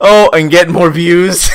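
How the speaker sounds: sudden shouted outburst. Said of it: "I'm sorry for screaming".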